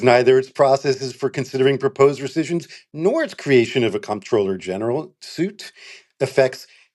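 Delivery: ordinary delivery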